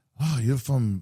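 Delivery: put-on heavy, laid-on, very thick French accent. Retelling a Formula One chat with a guy who spoke in a thick French accent. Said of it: "in a very thick uh, French accent goes".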